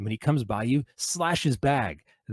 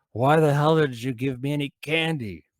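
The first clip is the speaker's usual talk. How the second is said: put-on louder, higher drunk yell. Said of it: "yell at them in a drunk voice".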